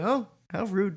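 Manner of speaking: soft, clumsy, botched droid voice. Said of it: "that was a terrible impression".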